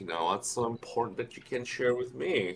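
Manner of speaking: playful, needling tone. Voicing a character teasingly asking what is so important: cheeky tone. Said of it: "in a bit of a cheeky way says".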